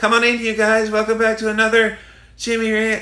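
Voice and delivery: noticeably very high, lifted talking voice. Showing how a raised voice stands out, the speaker demonstrates a higher-pitched voice. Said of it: "you would really notice if I was talking like this".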